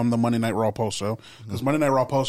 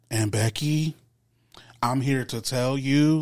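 mock robot-like flat voice. Mocking Liv's promo delivery, the speaker imitates her: robotic voice. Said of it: "she sounds like a robot".

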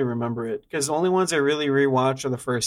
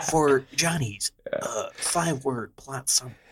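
movie trailer announcer voice, much quieter; 3 dB quieter than usual. Introducing johnny's five-word plot summary, in a trailer narrator voice. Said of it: "when I do this voice ... trailer narrator voice".

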